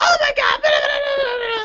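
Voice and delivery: very high, shrill, shouted rant. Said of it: "starts to yell at me".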